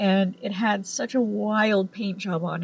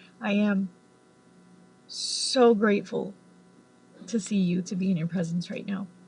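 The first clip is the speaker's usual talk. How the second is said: usual speaking voice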